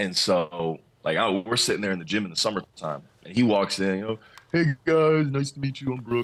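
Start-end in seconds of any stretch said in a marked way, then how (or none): 4.5-6.2 easygoing, casual, natural speaking voice. Retelling a new teammate walking into the gym: imitating Brook Lopez. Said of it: "that's exactly how he talks".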